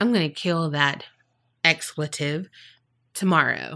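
soft, mumbled, half to oneself. Retelling what a taxi passenger said while looking out the window: imitating someone mumbling. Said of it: "just kinda mumbling it".

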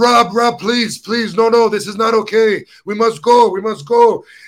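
mock frightened pleading. Retelling how a friend reacted at a dark restaurant, imitating Martin's scared plea. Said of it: "martin was so scared he's like".

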